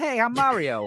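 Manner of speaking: put-on gentle, mild, light New Jersey accent. Describing how the movie did the voice, soft Mario voice. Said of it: "it's just kind of soft".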